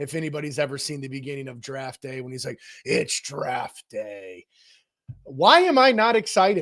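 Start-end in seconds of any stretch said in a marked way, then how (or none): 2.8-4.4 hushed, breathy whispered put-on voice. Quoting the opening of Draft Day in a best Chris Berman voice. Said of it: "in my best Chris Berman voice".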